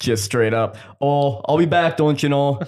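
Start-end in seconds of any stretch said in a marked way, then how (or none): 1.0-2.6 put-on Minnesota accent, laid on thick. Repeating their own parting words to a woman: thick Minnesotan accent. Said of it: "So I laid it on thick".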